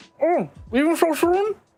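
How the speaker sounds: talking with a full mouth. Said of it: "he's got his face full of pizza and goes".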